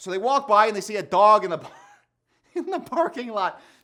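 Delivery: chuckling while speaking. Describing a favorite episode's cold open, laughing while talking. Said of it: "I'm laughing because I'm picturing Dwight".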